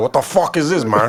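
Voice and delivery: unfazed, unimpressed, put-on character voice. Joking about how a character would react, Tony Montana impression. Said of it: "I can't do that good of a Tony Montana impersonation".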